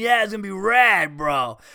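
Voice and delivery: cheerful, positive bro talk. Retelling what a friend said about coming along, imitating Dean's voice. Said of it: "You know Dean's voice, right?".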